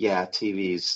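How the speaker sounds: put-on very low, soft, menacing, sinister murmur. Retelling a scene where a man with a million tvs answers: mimicking a sinister tone. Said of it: "it had like a really sinister tone".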